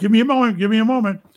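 put-on struggling, muffled speech. Retelling a phone reading, imitating speaking with mouth full. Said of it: "they can hear me not being able to speak".

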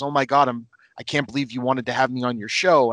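ordinary talk

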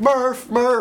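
very high-pitched, shrill yelling. Describing an emotional movie scene where a man keeps calling a name, retelling a yell. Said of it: "he's just like yelling like".

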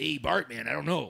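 gravelly put-on character voice. Doing a cartoon character impression on request: Otto voice. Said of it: "I used to do Otto as a kid".

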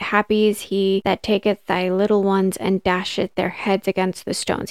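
normal talking voice

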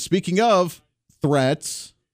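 slow, drawn-out sarcastic delivery.

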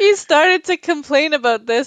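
high voice, speaking through laughter. Sharing a story about their therapist, laughing while talking. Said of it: "I'm sorry that I'm laughing".

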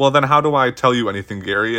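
normal talking voice

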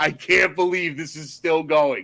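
mock loud yelling. Retelling watching the third movie in a theater: imitating own loud yell. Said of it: "loudly yelling at the screen".

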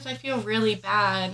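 ordinary delivery

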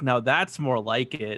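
put-on whisper under breath. Retelling a scene from a movie: imitating a whisper under the breath. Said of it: "whispers under his breath".

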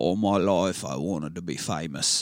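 failing attempt at a drawn-out Cockney accent. Quoting the opening line of a movie: attempted cockney accent. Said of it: "Are you trying to put on a Cockney?".

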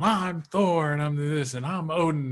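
mock grand, high, drawn-out yell. Retelling a cousin shouting that he is Thor and Odin: imitating Kolya yelling. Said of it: "he's yelling".

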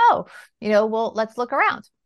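ordinary delivery

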